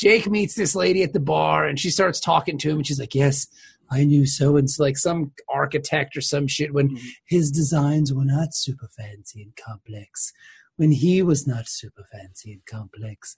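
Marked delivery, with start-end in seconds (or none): 3.1-13.4 put-on whispery voice, lower. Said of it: "That's her voice to me".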